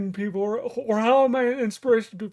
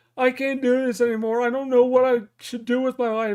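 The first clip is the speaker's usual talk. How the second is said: ordinary talk, nothing marked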